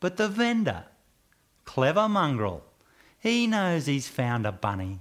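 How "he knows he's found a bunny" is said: ordinary delivery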